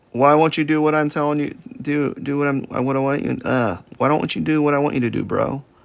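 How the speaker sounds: stammering, stuttering, tripping over words. Talking to his own hand that won't do what he wants, stuttering. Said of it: "I'm like stuttering over here".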